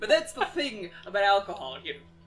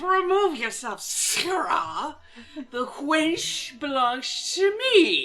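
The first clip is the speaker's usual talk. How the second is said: put-on drunken voice, much higher; 6 semitones higher, 4 dB louder than usual. Voicing a drunken soldier in the scene, drunk voice. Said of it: "That's my dad's drunk voice".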